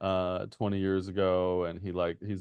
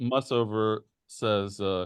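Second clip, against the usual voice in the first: ordinary talk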